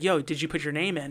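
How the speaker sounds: secretive, hushed, half-whispered stage whisper. Retelling a question someone asked them: imitating a half-whisper. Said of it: "whispered to us".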